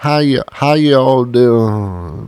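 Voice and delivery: put-on slight twang. Speaker imitating Knoxville trailer-park locals greeting someone, imitating a local's slight twang. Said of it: "a little twang".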